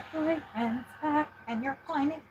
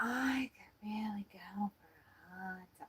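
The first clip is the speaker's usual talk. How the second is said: very hushed, soft, slow drawl with every word dragged; 3 semitones lower, 14 dB quieter than usual. Trying an impression of what she says: bad Jennifer Coolidge impression. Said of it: "the worst Jennifer Coolidge impression I've ever heard".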